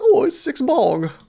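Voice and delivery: bad fake British accent, very high-pitched. Joking about British people counting Big Ben's bongs, in a terrible British accent. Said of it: "my terrible terrible British accent".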